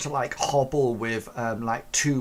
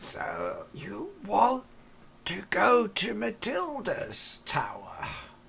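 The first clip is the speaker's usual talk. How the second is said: husky, hoarse, much higher; 9 semitones higher than usual. Narrating a story, a hidden figure asks Gulliver about the tower, in a husky voice. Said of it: "this husky voice coming from beneath".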